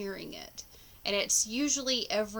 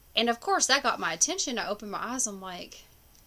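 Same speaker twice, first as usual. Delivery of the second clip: ordinary talk, nothing marked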